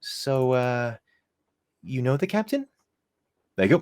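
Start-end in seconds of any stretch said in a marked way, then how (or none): 0.0-2.7 put-on high, slow, ladylike girly lady voice. Voicing a character who introduces herself as Lupe: Lupe voice. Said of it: "That's my I'm a lady girl voice".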